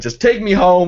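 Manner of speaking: put-on loud, high-pitched screaming. Retelling demanding a driver take them home: retelling own screaming. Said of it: "I started screaming at the guy".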